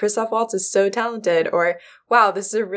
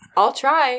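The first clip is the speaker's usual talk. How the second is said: mock unconvinced, half-hearted shrugging tone, pitched up; 6 semitones higher than usual. Quoting someone's reply to don't fall asleep: imitating a half-hearted I'll try. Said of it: "There was a shrug in your voice when you said, I'll try".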